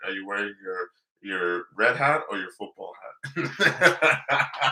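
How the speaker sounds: slow, laughing impression voice.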